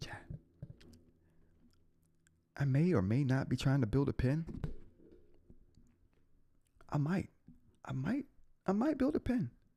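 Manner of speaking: hushed whisper. Telling chat a secret they can't say too loudly: whispering. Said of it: "let me whisper".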